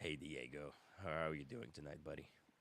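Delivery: deliberately deepened speaking voice, soft. Trying out a new way of talking to greet diego, deeper voice. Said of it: "Should I just talk with with a deeper voice?".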